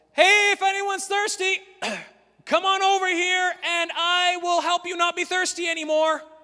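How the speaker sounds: mock shout, loud and high-pitched. Imagining a guy standing up in the middle of Sunfest calling out, retelling a loud shout. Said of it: "shouted in a loud voice".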